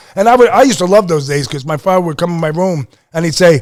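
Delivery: ordinary delivery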